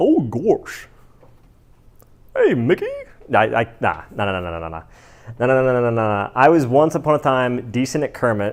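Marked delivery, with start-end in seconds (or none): 0.0-2.9 drawled words, pitched high, in a sing-song tune. Admitting weakness at impressions, the speaker tries a Goofy impression. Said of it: "Goofy's like".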